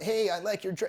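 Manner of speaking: timid, meek, eager-to-please tone. Contrast with a sassy quip, complimenting a dress: meek, rapport-seeking tone. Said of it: "this kind of like meek, trying for rapport tonality".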